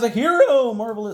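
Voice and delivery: voice cracking on the word, high and loud. Narrating a card game turn, voice cracking. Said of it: "voice crack".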